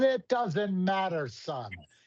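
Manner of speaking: very high, slow, drawn-out Irish brogue. Retelling a conversation about breaking even, imitating Mister Atfield's Irish brogue. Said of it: "almost came across like an Irish brogue".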